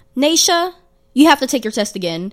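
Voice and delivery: loud, full-blast, high-pitched call-out. Retelling how an old math teacher announced a failed test, imitating her saying it loudly. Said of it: "she'd say it like as loud as possible".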